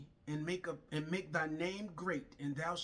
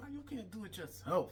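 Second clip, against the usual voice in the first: soft, grudging mumble under the breath; 4 semitones higher than usual. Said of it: "under my breath, I was mumbling".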